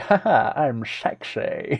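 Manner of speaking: very slow, drawn-out, unhurried leading-man delivery. Joking about leaving the stream feeling attractive: Sean Connery impression. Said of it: "I went for the Sean Connery impression".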